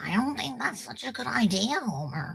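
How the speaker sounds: soft, high, swooping cartoon mom voice. Speaker shows off the cartoon voices they can do, as Marge Simpson voice. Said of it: "little Marge Simpson there".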